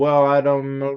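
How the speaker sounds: vague, high-pitched mumbling. Retelling a witness answering cross-examination: Rachel Jeantel mumbling. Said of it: "she would literally start to mumble".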